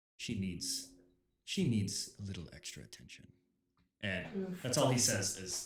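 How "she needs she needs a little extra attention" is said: softly whispered, close and private. Voicing a character who pulls a player aside at the ferry: softly whispering. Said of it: "kinda softly whispers in your ear".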